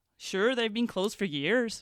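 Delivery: horrible put-on Northern Irish accent. Retelling a lovely guy's reply in a story, horrible Northern Irish accent. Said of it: "I've said that in a horrible Northern Irish accent".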